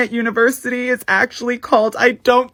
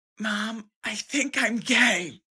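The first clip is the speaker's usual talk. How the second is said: very quiet, unhurried, hushed half-whisper; 10 dB quieter than usual. Retelling half-whispering to a sleeping mom on the couch: retelling a half-whisper. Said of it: "And I whisper to my mom".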